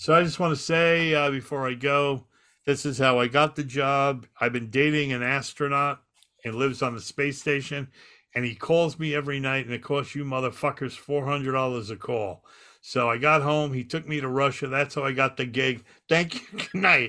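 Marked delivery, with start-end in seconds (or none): none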